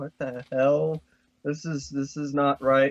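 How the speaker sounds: put-on shocked and alarmed outcry. Imagining the foster parents' reaction, imitating alarmed foster parents. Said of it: "the foster parents are like".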